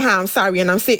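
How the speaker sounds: normal talking voice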